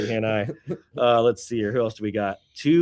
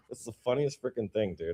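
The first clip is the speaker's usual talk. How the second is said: ordinary delivery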